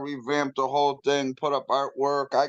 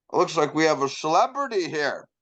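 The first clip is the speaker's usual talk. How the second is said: play-acted heavy sarcasm with a swooping sing-song tune. Retelling what a probation officer first said: imitating a sarcastic officer. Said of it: "She was all fucking sarcastic".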